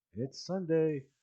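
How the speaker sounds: soft mutter under the breath, kept to oneself. Retelling a quiet remark to the departing missus: imitating muttering under breath. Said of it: "And under my breath".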